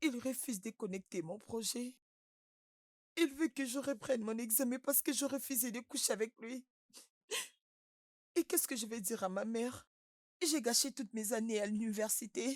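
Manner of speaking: speaking through tears. A student tells a listener about trouble with a professor, crying while talking. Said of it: "Arrête de pleurer".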